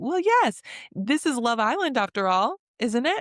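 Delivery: high, sarcastic, tossed-off delivery.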